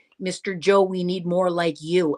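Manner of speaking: plain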